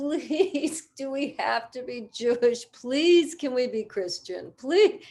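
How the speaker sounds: tearful, high, drawn-out voice through sobs. Recalling her sister's pleas after going to church with friends, imitating sister crying. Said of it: "She would be like crying".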